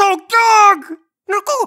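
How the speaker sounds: very high, loud, gasping little-creature yelling.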